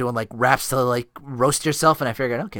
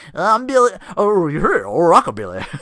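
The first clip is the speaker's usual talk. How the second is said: put-on wacky announcer voice, higher and louder; 7 semitones higher, 7 dB louder than usual. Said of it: "this wacky, uh, announcer voice".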